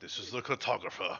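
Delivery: eerie, breathy, creepy whisper. Quoting what the boss said earlier, mimicking Ben Mears' voice. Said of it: "could you stop doing that with the voices?".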